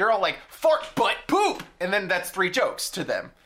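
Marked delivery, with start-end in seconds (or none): 0.5-1.6 put-on, very high, shrill blurted yell. Imitating a show's jokes: imitating someone yelling words. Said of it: "You just yelled words".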